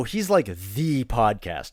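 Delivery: "the" said with heavy, strong emphasis. Explaining how emphasizing a word in english changes meaning: heavy stress on "the". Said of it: "if you really emphasize that word, it means something very specific".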